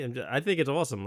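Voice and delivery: plain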